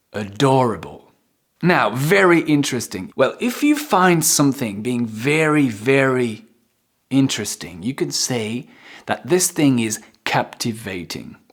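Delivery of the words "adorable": adorable with stress on do. Pronunciation lesson on adorable: stress on do in adorable. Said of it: "So you insist on the do".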